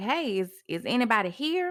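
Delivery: ordinary delivery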